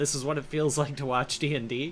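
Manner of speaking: ordinary talk, nothing marked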